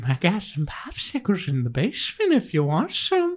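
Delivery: sing-song voice swooping up high. Joking with the others: Pennywise mixed with Herbert voice. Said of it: "Like Pennywise mixed with Herbert".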